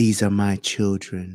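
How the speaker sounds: creepy, predatory-sounding voice. Mocking the way a man talks to children: imitating a pedophile-sounding voice. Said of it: "He got a pedophile voice".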